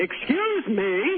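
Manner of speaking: put-on sarcastic, overly polite, pointed excuse me. Retelling a story, quoting Bart answering the girlfriend, acting out a loud facetious line. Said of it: "Bart says in a loud voice".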